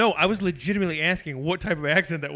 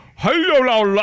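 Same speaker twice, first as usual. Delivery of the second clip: put-on strong Nigerian accent, loud and high; 7 semitones higher, 7 dB louder than usual. Imitating a friend's father, in a strong Nigerian accent. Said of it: "strong Nigerian accent".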